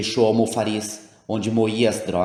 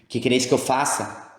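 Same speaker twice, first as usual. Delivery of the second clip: ordinary delivery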